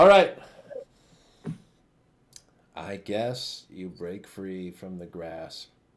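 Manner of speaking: loud, deflated, let-down, disappointed tone. Conceding that a player breaks free after rolling a natural twenty, disappointed. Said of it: "You sound so disappointed".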